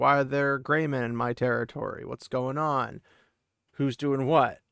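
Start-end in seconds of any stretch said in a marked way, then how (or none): none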